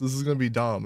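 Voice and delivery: ordinary talk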